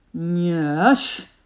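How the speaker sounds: loud, drawn-out growling slug voice, stretched yes. Narrator reads the slug Slugger answering Maximus: Slugger's growling slug voice. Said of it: "growled the slug".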